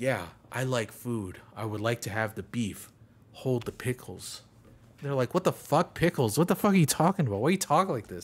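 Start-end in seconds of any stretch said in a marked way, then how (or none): 0.0-4.4 deep, low, hushed, formal presenter voice. Describing a boyfriend ordering at his girlfriend's parents' dinner, talking like presenting something. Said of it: "talk like he's fucking presenting something every time".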